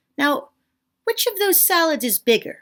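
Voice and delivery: play-acted slick, suave delivery. Retelling own question to a cute waiter: imitating own smooth delivery. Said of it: "the most smooth question anyone's ever asked".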